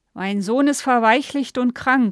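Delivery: put-on loud, slurred, drunk-sounding speech. Reading the line of a drunken man who has burst into the bedroom: slurred. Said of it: "lallte Gustav".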